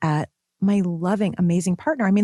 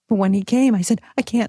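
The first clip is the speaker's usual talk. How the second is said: ordinary delivery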